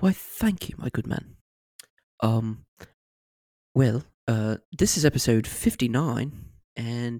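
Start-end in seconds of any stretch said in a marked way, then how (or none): 0.0-6.3 put-on nice, clumsy bear character voice. Thanking a brother for the intro: mediocre Ben Whishaw impression as Paddington. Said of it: "this is my mediocre Ben Whishaw impression".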